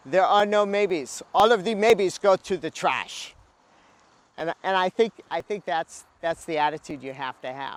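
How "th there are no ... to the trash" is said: put-on French accent, spoken out loud with raised voice. Quoting a French photographer's interview line: Henri Cartier-Bresson French accent. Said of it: "he says in his French accent".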